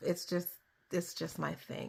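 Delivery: toned down. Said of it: "Let me just tone it down".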